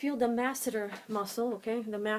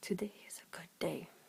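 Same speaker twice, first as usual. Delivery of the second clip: soft, barely voiced whisper; 4 semitones lower, 9 dB quieter than usual. Whispering a test phrase to someone with one ear blocked: whispering. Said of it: "I'm going to whisper something".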